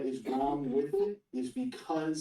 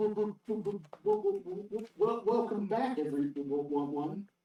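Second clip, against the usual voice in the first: nervous, pitched-up, halting stammer; 6 semitones higher than usual. Voicing a cult member greeting the party: stuttering nervous character voice. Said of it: "he's like".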